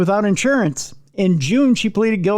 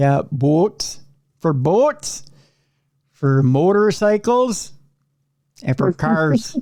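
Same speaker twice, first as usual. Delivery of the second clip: fake accent with drawn-out O's, lower pitch; 3 semitones lower than usual. Joking with another speaker about making license plates: put-on accent with drawn-out O's. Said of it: "I'm just driving people nuts with the accent".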